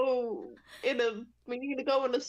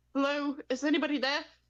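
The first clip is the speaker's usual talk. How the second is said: mild put-on British accent at usual pitch. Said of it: "Trying to pull out the British voice".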